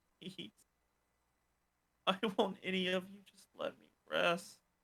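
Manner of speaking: faint, weak, barely there half-whisper. Voicing a cursed woman in the chest: faint half-whisper of the woman. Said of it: "a faint whisper of the woman".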